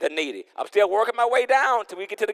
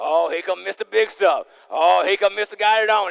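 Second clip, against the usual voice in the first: snide, sarcastic, mocking, jeering tone. Describing how others talk about someone now, imitating sarcastic taunts. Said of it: "they throwing sarcasm".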